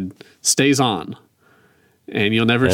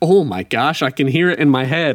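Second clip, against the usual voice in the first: usual speaking voice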